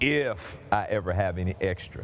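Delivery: heavy emphasis landing on "if". Repeating the line about having any extra, strong stress on if. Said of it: "I put a big emphasis on if".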